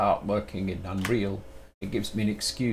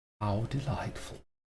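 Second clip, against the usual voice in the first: soft, posh storybook villain voice; 6 dB quieter than usual. Streamer recalling a role he still remembers, posh Shere Khan voice. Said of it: "and from there comes the posh voice".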